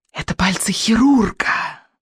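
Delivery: witch voice hissing the words. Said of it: "прошипела ведьма".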